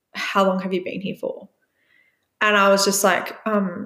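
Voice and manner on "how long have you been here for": play-acted dry, flat, expressionless deadpan voice. Retelling what a woman asked him, imitating a deadpan reply. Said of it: "she like deadpan looked at me in the face and was like".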